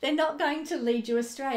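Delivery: laughing and giggling while talking. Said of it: "I'm sorry, I keep laughing".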